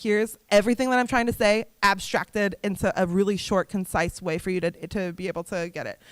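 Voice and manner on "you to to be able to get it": ordinary talk, nothing marked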